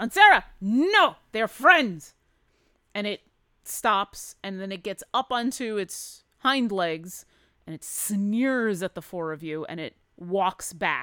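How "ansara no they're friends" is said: very loud, high, sharp snapping scolding tone. Voicing a character scolding a snarling creature: Dorvine snapping at creature. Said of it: "Dorvine snaps at this creature and says".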